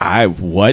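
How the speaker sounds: puzzled, bewildered, caught-off-guard, confused tone. Retelling a movie scene, voicing the slashed fighter: imitating confusion. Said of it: "confused by this".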